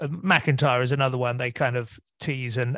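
ordinary talk, nothing marked

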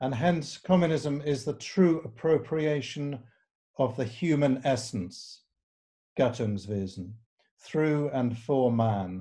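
slow reading, long pauses between phrases.

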